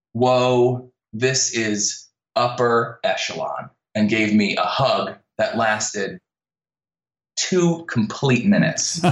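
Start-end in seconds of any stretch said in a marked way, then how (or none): none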